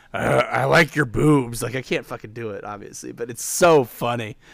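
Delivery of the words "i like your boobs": loud, slow, rough, drawn-out voice. Describing a movie scene, quoting a line in Seth Rogen voice. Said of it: "it's just him in his Seth Rogen voice. Okay, how's he do?".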